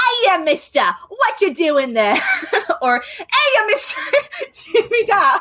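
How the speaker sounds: very high, swooping, rough-and-tumble street urchin voice. Speaker demonstrates a rough and tumble way of talking, generic orphan voice. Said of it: "that's my generic orphan voice".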